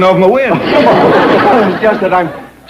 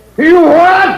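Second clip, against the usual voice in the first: very high, shrill, disbelieving shout; 10 semitones higher than usual. The chief hears his wife sent a shelter truck for Ellie's pets, shouting in disbelief. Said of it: "Still shouting".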